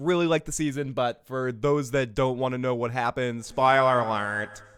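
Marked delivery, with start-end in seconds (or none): 3.5-4.6 loud, deliberately grating, very annoying voice. Warning those who don't want spoilers, in the most annoying voice ever. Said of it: "in the most annoying voice ever".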